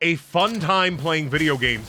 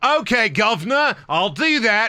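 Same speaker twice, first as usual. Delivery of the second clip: put-on British accent, slow and unhurried, pitched high; 5 semitones higher, 3 dB louder than usual. Acting out a reply to a request to climb a tower: put-on british accent. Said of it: "She doesn't even have a British accent. I'm just stuck in it".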